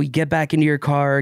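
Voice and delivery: ordinary talk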